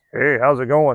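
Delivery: woman's voice, trying to sound tough. Retelling a greeting in the locker room: imitating a female voice trying to be tough. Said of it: "in a female voice, but trying to be tough".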